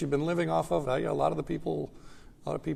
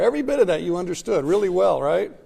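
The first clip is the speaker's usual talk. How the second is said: loud, knowing, swooping sarcastic tone; 3 semitones higher, 9 dB louder than usual. Asking the class whether they understood the material: a little sarcastic. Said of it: "I'm being a little sarcastic here".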